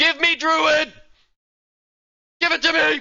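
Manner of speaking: all-out yell, very loud and high-pitched. Interrupting an update announcement with a personal demand, yelling. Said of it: "I'll stop yelling".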